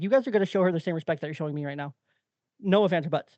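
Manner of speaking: stern dad voice. Retelling addressing a noisy kids group: imitating his raised dad voice. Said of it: "raised my voice and got my dad voice in there".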